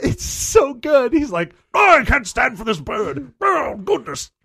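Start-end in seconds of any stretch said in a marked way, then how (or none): 1.7-4.3 exaggerated, over-the-top British accent, higher pitched. Imitating the british bus driver when a pigeon lands on his lap: exaggerated british accent. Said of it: "he is just as British as is possible".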